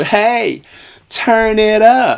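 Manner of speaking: put-on, very high, very slow, drawn-out holler. Retelling a film scene where a character calls out a window: imitating a shout. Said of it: "Jamie shouts out the window".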